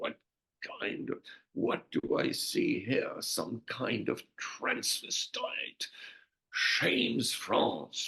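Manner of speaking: acted lofty, disdainful, very haughty officer's voice. Retelling what a general said at the speaker's court-martial: haughty voice. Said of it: "he says in a very haughty voice".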